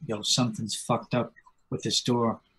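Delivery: very quiet whispered aside. Speaking in character to a companion about a door: whispering. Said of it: "I'm just gonna whisper to him".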